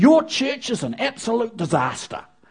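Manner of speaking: put-on, acted-out ranting tirade. Retelling what a woman said to the pastor: retelling a tirade. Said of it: "she just went on this tirade".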